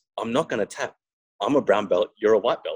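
put-on speaking with Brazilian accent. Retelling what an opponent caught in a heel hook said, Brazilian accent. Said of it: "he goes in his Brazilian accent".

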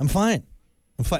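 put-out, irritated, upset, annoyed tone. Acting out the common lie, saying fine while sounding upset: imitating an upset "I'm fine". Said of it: "it sounds like you're upset with me".

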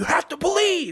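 screamed way up in the register, high-pitched. Describing a plastic-sword scene in the woods where one man screams at another, retelling a scream. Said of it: "he's like screaming at him".

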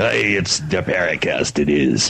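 talking like a pirate. Opening the Paracast radio show, talking like a pirate. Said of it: "sounds like you're doing the talk like a pirate".

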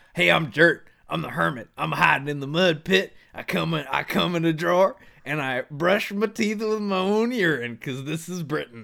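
comic, put-on, laid-on Southern accent. In a comedy bit, a hired hermit in a mud pit introduces himself: Dirt the hermit, southern accent. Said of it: "I don't know why I got this southern accent".

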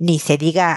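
ordinary delivery

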